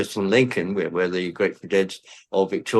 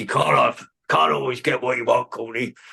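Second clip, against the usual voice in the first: rough, gravelly delivery; 4 semitones higher than usual. Quoting what a man said to the speaker, in his gravelly voice. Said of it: "In his gravelly voice".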